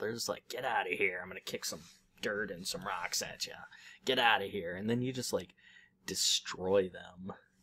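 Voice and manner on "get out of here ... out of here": put-on grumpy imp voice. Describing the imps to a co-player, imitating grumpy imps. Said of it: "they're kind of grumpy".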